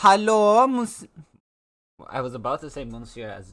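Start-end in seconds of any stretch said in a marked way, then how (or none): 0.0-1.1 fake German accent, higher and louder. Greeting chat after asking whether to do german: put-on german voice. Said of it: "with the German voice".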